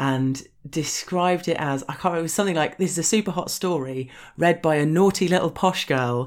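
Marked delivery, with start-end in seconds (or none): none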